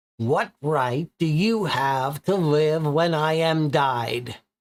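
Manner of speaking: hissing through every word. Reading a character's line aloud from a story, hissing. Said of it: "He hisses".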